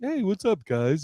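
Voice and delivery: put-on easygoing, laid-back, chill stoner-comic style voice. Retelling how Doug talks on stage: imitating a comic's chill voice. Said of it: "he's very like, ... very chill".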